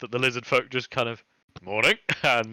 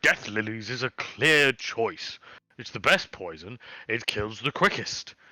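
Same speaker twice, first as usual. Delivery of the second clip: usual speaking voice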